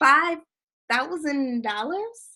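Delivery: rising, question-like intonation on "dollars". Stating a service price as if asking a question: questioning rise on 'dollars'. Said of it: "you sound like this. ... saying it with a question mark on the back end of it".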